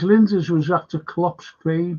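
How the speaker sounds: ordinary delivery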